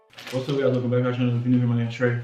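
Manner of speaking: hurried, rapid-fire, rushed fast delivery. Starting a channel video, the host rushes through the intro: rushing the intro. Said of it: "doing the intro real fast".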